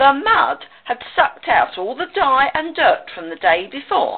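ordinary delivery

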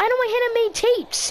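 loud, high-pitched outburst. Talking with a man who can't listen to Hannah's tapes, loud. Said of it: "Lower your goddamn voice".

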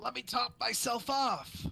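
put-on angsty teenager voice. Playing a game with friends, quoting a character's voice line; Ezreal voice. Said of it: "why'd you say it like a angsty teenager?".

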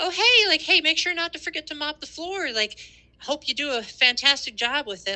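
overly nice, sweet, very high-pitched voice. Retelling how she spoke to someone whose work she was checking, acting out a nice, smiling voice. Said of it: "saying it in a nice voice. Like, I was smiling".

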